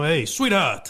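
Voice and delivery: Brooklyn local guy voice. Imitating a stereotypical Brooklyn guy at a diner: Carano as a Brooklyn diner guy. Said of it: "you see him in Brooklyn at a diner".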